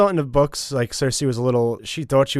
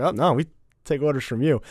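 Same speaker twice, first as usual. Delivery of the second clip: ordinary talk, nothing marked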